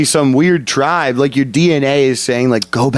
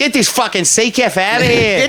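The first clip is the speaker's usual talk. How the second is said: put-on Australian accent attempt, pitched up; 9 semitones higher than usual. Trading a quoted line with another speaker, in an Australian accent. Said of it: "You're good".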